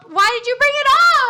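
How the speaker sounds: high, exasperated shouting. In an acted scene between a father and son, yelling. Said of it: "please stop yelling at me".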